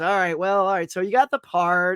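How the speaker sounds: put-on super-depressed, glum voice. Retelling how the manager broke the news about the part, imitating a super-depressed voice. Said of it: "she sounded super depressed".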